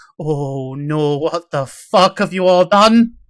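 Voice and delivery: horrified dwarf woman voice, loud, slow, alarmed. Narrating a scene, speaker voices a dwarven woman seeing the group by a burning corpse: alarmed dwarven woman. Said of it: "small dwarven woman comes out from the tap house".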